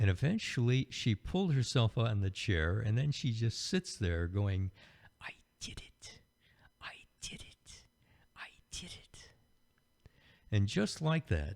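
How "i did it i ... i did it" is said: put-on tiny little kid's whisper, slow and breathy. Retelling a small girl sitting on the chair she pulled herself onto, in her little child's voice. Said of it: "I hear her this little voice saying".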